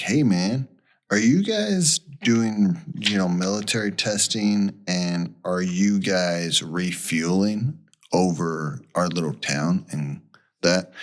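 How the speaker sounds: ordinary delivery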